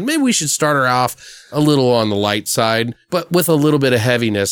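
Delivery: ordinary delivery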